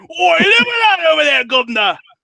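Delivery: very high, sing-song, swooping cartoon British voice. Speaker shows how they sound, South Park-style British accent. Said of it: "That's how I sound like like the uh, when uh, South Park does like a British thing".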